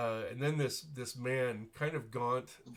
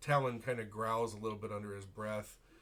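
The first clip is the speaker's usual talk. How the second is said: ordinary delivery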